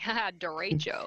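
imitated American pronunciation. Mocking how regular americans say the word: imitating americans saying it. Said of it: "the regular Americans just being like".

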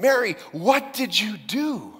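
very slow, stunned alarm. Retelling an imagined moment where Joseph questions Mary: imitating an alarmed voice. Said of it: "with alarm in his voice".

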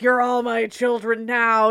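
very loud, bellowed, hammy villain voice. Describing Freddy Krueger hamming it up for an obsessed crowd, Freddy Krueger impression. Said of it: "He's like".

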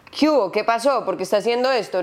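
stern scolding. Describing switching from sweet talk to scolding someone: mock scolding, raised voice. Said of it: "Me toca subir la voz y ser de pronto esa parte de regaño".

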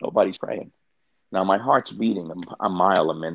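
ordinary delivery

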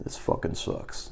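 muttered under the breath. Retelling walking past the man who ordered them to sit down, muttered under the breath. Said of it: "I say under my breath".

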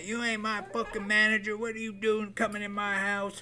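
put-on light half yell. Retelling how mom yelled when he walked into her home: imitating mom yelling. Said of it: "She started fucking yelling at me".

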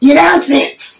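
loud, shrill, very high, annoying little voice. Mimicking how Gavin brings up the announcements, Gavin's annoying loud little voice. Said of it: "Like just the most annoying little voice and just loud".

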